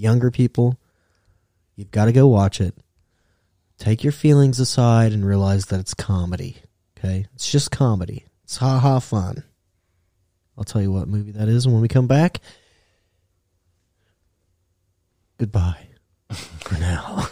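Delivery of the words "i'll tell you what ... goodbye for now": radio announcer voice, lower and quieter. Signing off before a break, in a radio voice. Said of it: "My radio voice".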